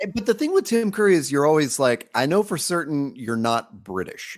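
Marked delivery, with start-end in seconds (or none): none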